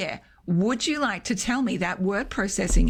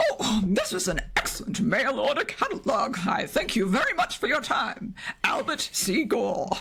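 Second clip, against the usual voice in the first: very strong put-on mid-Atlantic accent, swooping. Showing how you read out the testimonials, in a put-on mid-atlantic accent. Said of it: "in a very kind of mid-Atlantic kind of accent".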